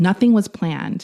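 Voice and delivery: ordinary talk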